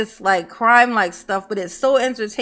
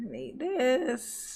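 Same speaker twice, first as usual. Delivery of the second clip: very soft, quiet voice, breaking up and cracking; 2 semitones higher, 11 dB quieter than usual. Streamer talking to the chat: voice cracking. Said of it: "Mama's voice is cracking".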